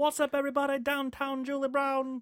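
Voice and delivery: very high, slow, drawn-out bad English accent. Imitating a TV host with an English accent: Downtown Julie Brown impression. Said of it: "My accents are horrible".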